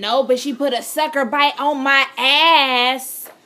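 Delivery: very loud, slow, booming, with "ass" drawn out. Retelling what the partner said to friends at school: imitating someone saying it loud. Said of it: "like how I imitated".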